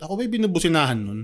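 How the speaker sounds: ordinary talk, nothing marked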